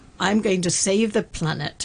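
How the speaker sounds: plain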